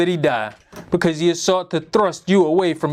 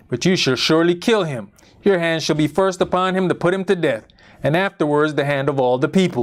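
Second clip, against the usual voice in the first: ordinary talk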